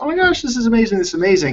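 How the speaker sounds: put-on very high, excited, starstruck gushing. Retelling how new agents talk to the speaker: imitating excited new agents. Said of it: "they're always so excited".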